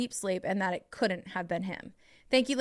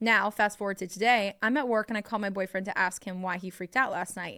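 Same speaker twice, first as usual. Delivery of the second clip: plain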